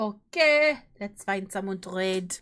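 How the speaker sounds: put-on French accent. Looking for someone to raid, speaking in a put-on French accent. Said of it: "I'm speaking in my French accent".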